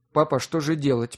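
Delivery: ordinary delivery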